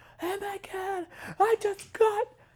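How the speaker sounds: put-on shrill, very high-pitched scream. Retelling a man tear-gassed at his first protest, imitating a man screaming. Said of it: "he's screaming".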